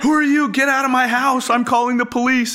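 mock shrill, piercing, very high, loud screaming. Retelling a woman finding strangers in her house: imitating someone screaming. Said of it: "And she starts screaming".

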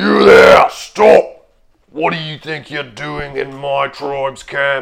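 booming, resounding, loud forceful delivery. A figure confronting an intruder in his tribe's camp, in a booming voice. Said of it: "you hear a booming voice".

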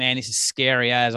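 normal talking voice

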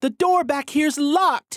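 shrill, very high, loud hollering. Reading a story aloud, a character finds a locked door: hollering. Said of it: "Jolene hollers".

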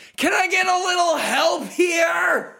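very high shout with "here" stretched out. A character getting nowhere with dragons looks up and shouts to the sky. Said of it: "looks up to the sky and shouts".

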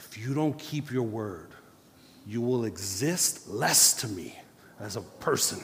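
mock furious, angry scolding tone. Retelling what she said to her child who broke her word: retelling an angry rebuke. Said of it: "I got so mad".

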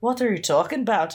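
showy, put-on Irish brogue. Joking about a pickup line, voicing the other person's reply in an Irish accent. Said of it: "Which is my incredible Irish accent".

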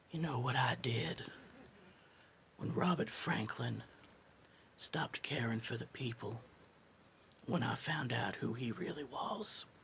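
close, menacing, threatening whisper. Voicing a character leaning close to threaten someone: whispering menacingly. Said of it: "lean down real close and whisper".

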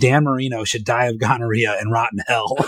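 plain

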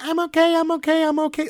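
very high, slow, faulty voice-box robot voice. Retelling a robot daughter whose voice box has gone wrong, high-pitched voice. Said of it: "Like in this high-pitched voice".

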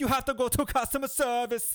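put-on Jamaican accent with a very high voice. Retelling a man's answer to you at the airport, in a Jamaican accent. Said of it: "he goes in this Jamaican accent".

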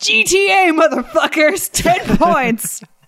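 all-out, high, loud shout. Retelling a movie character's line as he runs over a zombie: retelling LJ's shout. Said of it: "he shouts".

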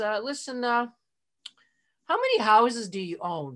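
mock steady, calm, grounded, slow and unhurried. Retelling Stephen's answer to a yelling manager on the phone, imitating Stephen's calm, grounded tone. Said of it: "Stephen was really grounded".

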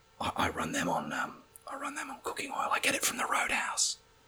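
quiet, hushed whisper.

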